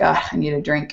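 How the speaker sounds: quiet muttering under the breath. Retelling a phone call after a horrific sight, speaker mutters under breath. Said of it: "under my breath".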